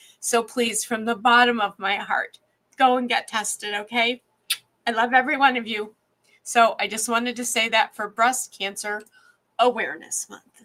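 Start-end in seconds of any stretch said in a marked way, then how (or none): 0.2-6.0 weepy, heartfelt, crying through the words. Urging viewers to get tested for cancer, crying while talking. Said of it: "And now I will stop crying".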